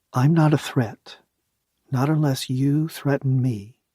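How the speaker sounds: mild, gentle, calming, unthreatening. A narrator, having sat down, reassures a spider in a soft, gentle voice. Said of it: "I spoke in a soft, gentle voice".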